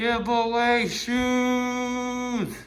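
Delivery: muffled speech. Speaker shows off giveaway shoes to viewers, muffled. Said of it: "sorry guys if I sounded muffled".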